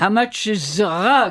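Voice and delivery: put-on thick, heavy French accent. Retelling a french woman asking a friend about a rug: heavy french accent. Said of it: "said with a very, very French, heavy French accent".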